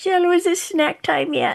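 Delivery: put-on high little old lady voice. Joking about being old in a walker: imitating her future elderly self. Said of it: "then I'll be in a walker".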